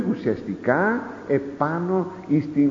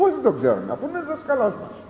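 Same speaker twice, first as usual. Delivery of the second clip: put-on flippant, childlike tone; 11 semitones higher than usual. Acting out people's answer about knowing Jesus, with mock childish flippancy. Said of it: "Ακούστε, με πόση επιπολαιότητα, παιδική επιπολαιότητα".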